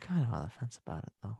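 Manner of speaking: tired, stoned voice, very soft. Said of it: "I could just sound tired and stoned".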